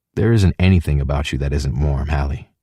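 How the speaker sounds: ordinary delivery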